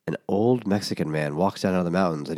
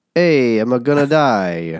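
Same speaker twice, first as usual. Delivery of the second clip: loud, pitched-up put-on Italian accent; 5 semitones higher, 8 dB louder than usual. Voicing a character while friends react to the accent; italian accent. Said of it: "he's Italian now".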